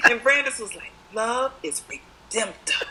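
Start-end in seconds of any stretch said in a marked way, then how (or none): 1.1-2.8 slow, deliberate grandmotherly voice, every word weighted. Retelling how Brandis said it: slow, grandmotherly Cicely Tyson delivery. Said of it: "She says it slow".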